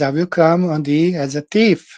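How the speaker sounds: usual speaking voice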